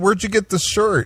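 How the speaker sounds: mock keen interest. Retelling a man's reply to a woman's story, imitating someone sounding interested. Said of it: "he gets all interested".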